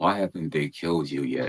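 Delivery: whispered speech. Retelling what a figure close to the ear said: imitating a whisper. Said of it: "he whispers in my ear".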